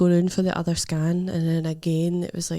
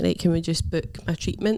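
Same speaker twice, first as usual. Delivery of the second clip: ordinary talk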